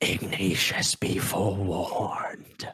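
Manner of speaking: low, hushed whisper. Game master voicing a fading elemental's warning, in a whisper. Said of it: "in the same whisper that you heard".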